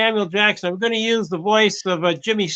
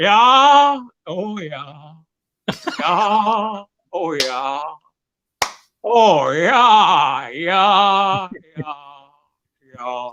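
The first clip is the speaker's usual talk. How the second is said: "yeah" stretched out, very slow and drawn-out; 3 semitones lower than usual. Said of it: "with Jimmy Stewart and".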